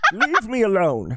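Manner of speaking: acted vampire character voice. Showing a Laszlo impression: Laszlo impression. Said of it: "that's my Laszlo".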